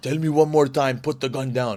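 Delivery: put-on Armenian accent with broken English. Retelling an angry customer at a shooting range: broken Armenian accent. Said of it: "a broken Armenian accent".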